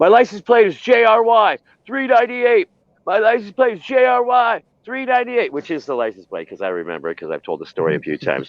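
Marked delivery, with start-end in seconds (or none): 0.0-5.5 put-on very high-pitched shouting, repeated again and again. Retelling yelling his license plate number at police officers: imitating his own past yelling. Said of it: "I'm yelling at these guys".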